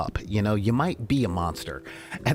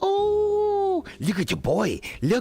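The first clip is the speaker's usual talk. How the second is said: very high, swooping cooing voice. Expected to gush over cute things, showing the voice people use for cute things. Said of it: "I'm doing the voice that people do when they when they see stuff that's cute".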